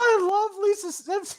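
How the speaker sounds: put-on very high, squeaky, dim little-boy voice. Asked to do a Ralph impression, speaker attempts it: Ralph Wiggum voice. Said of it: "can you do a Ralph impression or no?".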